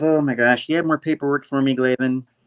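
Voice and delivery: ordinary talk, nothing marked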